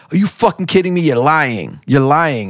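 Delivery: shocked, upset tone, kind of yelling. Telling of the twins news, the speaker acts out his wife, retelling her kind of yelling. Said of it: "she started like kind of yelling at her".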